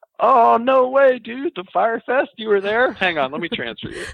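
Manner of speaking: very high, loud excited dude voice. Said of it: "And he was like".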